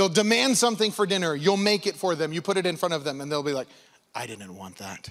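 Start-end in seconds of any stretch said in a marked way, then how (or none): 4.1-5.1 put-on very quiet three-year-old child voice. Retelling how a three-year-old rejects the dinner they demanded: imitating a three-year-old. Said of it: "letting a three-year-old run the house".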